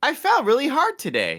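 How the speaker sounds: high, robotic text-to-speech lady voice. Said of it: "have the robot lady voice go".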